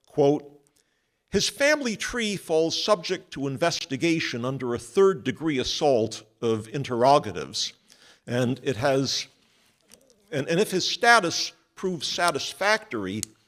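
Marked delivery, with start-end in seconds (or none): none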